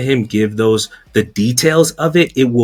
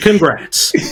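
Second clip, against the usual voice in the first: sarcastic mock congratulations, higher; 6 semitones higher than usual. Mockingly praising a corporation's handling of a scandal: sarcastic praise. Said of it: "That's the sarcastic clap".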